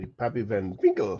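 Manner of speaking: good put-on German accent. Speaker saying a name in a good German accent. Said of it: "Had to say it with a good German accent".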